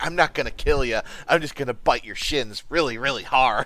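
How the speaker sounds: put-on menacing villain voice. Picturing someone acting as the Joker: Jared Leto's Joker voice. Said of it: "Jared Leto's Joker going".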